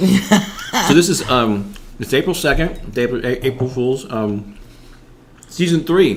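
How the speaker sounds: very slow speech with mouth full of food. Opening a live stream episode, the host is talking with mouth full. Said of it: "I should never have taken that bite".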